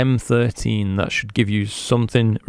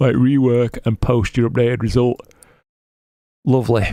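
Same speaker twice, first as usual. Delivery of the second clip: talking through a yawn. Giving feedback to a viewer directly, yawning while speaking. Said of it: "Sorry for yawning".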